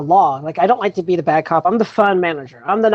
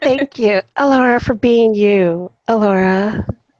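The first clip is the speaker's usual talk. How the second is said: spooky, eerie toy-doll voice; 3 semitones higher than usual. Speaker playfully thanks someone while playing a doll, creepy doll voice. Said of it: "That's creepy, dude".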